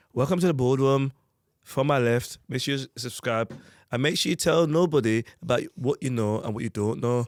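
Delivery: put-on Birmingham accent drifting toward northern English. Asked to say a line for the others, attempting a Birmingham accent. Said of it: "in a Birmingham accent".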